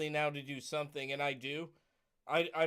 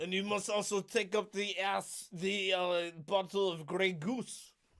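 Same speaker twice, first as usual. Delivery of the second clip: put-on Russian accent; 4 semitones higher than usual. In a comic bit meant as French, the speaker slips into a put-on Russian accent. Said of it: "I went Russian".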